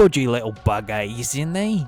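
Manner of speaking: unpolished, bad put-on British accent. Showing how an on-the-spot attempt comes out, bad put-on british accent. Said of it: "I haven't perfected my British British accent".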